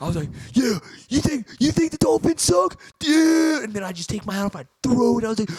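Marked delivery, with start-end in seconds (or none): 0.5-3.6 put-on very high, shrill, loud screaming. Speaker reenacts watching a Dolphins game, retelling his own screaming.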